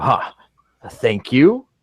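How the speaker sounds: chuckling, swooping, laughing through the words. Voicing a huge half-orc snatching a food tray: chuckling. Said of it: "he's gonna chuckle and go".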